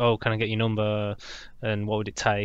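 ordinary delivery

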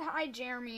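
ordinary talk

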